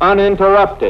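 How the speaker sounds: "uninterrupted" stressed with a falling finish.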